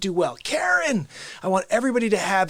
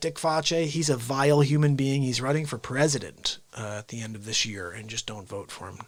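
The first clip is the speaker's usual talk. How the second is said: usual speaking voice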